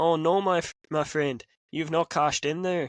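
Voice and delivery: put-on Irish-accented speech. Imagining Finn coming out with the green briefcase after the cash-in; Finn Irish-accent impression. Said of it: "in that Irish accent".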